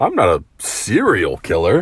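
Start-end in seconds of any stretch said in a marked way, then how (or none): 0.6-1.4 heavy stress leaning hard on the word serial. Quoting a line and leaning hard on the word 'serial'. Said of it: "why'd you put so much emphasis on serial?".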